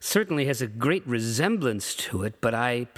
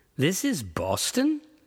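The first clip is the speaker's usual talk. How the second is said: high, open, incredulous tone; 6 semitones higher than usual. A man, just told the town is Boston, asks back incredulously. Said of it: "he asks incredulously".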